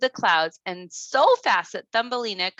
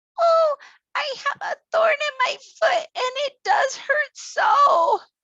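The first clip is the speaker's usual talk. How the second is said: feeble, weak, sickly, very high little voice. Narrator reads the sick little bird answering Thumbelina, in a weak, sick little voice. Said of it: "in a weak, sick little voice".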